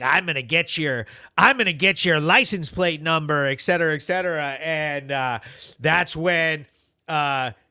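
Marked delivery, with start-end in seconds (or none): 0.0-3.5 put-on entitled ranting. Retelling what a woman yelled from behind the car: imitating an entitled Karen. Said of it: "doing the, like, Karen thing".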